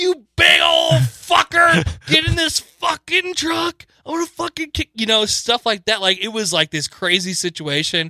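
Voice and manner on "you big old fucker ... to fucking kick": play-acted, very high, hollered screaming. Speaker recalls their grandpa screaming at cows, acting it out; imitating screamed obscenities. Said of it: "he was screaming obscenities".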